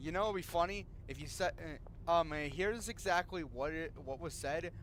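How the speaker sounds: ordinary delivery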